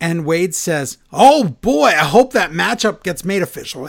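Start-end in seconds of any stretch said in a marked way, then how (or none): 1.1-3.9 mock thrilled announcer-style delivery, loud, all-excited gush. Retelling what a commentator said about a matchup: imitating someone excited. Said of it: "he's all excited".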